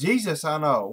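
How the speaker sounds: put-on loud demon voice. Retelling the exorcism story, voicing the demon's reply: imitating a demon's raised voice. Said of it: "raises its voice and says".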